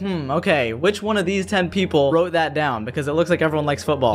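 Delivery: plain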